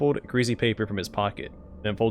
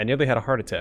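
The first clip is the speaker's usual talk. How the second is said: plain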